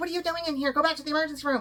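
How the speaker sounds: high yelling. Retelling how people in another wing yelled at her: imitating people yelling. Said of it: "other people start yelling at me".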